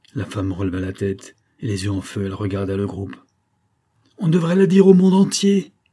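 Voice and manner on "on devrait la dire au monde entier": very high, loud, ringing exclamation. A woman addresses the group, crying out. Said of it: "s'écria-t-elle".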